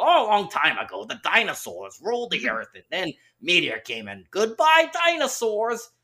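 put-on high-pitched Bronx accent. Speaker recounts a narration by a Simpsons voice actor, in Dan Castellaneta's Bronx voice. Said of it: "I guess he's doing another Bronx voice".

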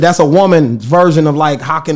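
plain

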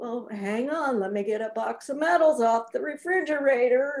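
dismissive, belittling father voice. Quoting the dad's reply whenever anything good happened, in a dad voice. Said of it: "that's my dad voice".

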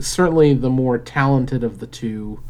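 ordinary talk, nothing marked

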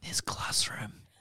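put-on whisper. Retelling how the teacher leans close to say the line: imitating a whisper. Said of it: "whispers it in his ear".

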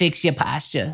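poor put-on Boston accent, old lady voice. Trying a voice never done before, the speaker plays an old-lady Boston accent. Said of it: "hybrid of that and other people doing poor Boston accents".

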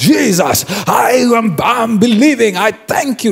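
confident, fiery acted delivery, high and slow. Acting out a believer after an hour of prayer: imitating a bold, fiery prayer. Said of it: "You will be on fire".

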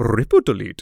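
heavy Indian accent, laid on thick. Explaining a video-editing habit, copying the guy from a tutorial: thick Indian accent impression. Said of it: "say out loud in his accent".

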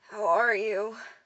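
pained, strained words through gritted teeth. Injured narrator asks the man beside them on crutches how he is, through clenched teeth. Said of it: "I asked through clenched teeth".

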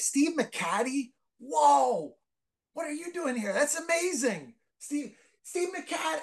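put-on high, slow scream, whoa stretched long. Retelling spotting an Oakland A's figure and calling out to him, retelling a scream. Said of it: "so I scream out".

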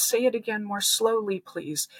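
ordinary talk, nothing marked

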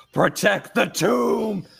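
yelling at full force. Narrating a figure in a rage attacking during a game, screaming. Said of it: "And just screaming".

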